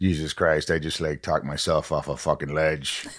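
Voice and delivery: put-on low New Jersey accent, like a local. Retelling a friend coming down the stairs after smoking pot, imitating Tommy's New Jersey accent. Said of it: "he literally talks like this".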